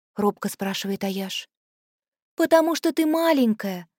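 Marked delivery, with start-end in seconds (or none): 2.4-3.8 caring tone, pitched up. Narrating a girl answering a small girl who asks to go along: caring answer. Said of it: "заботливо отвечает Лилуай".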